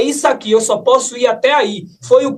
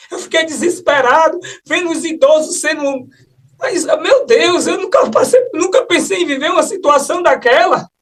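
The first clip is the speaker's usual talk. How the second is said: sobbing, distraught, words coming through tears; 4 semitones higher than usual. Recounting a desperate situation he went through, crying. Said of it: "Você tá chorando".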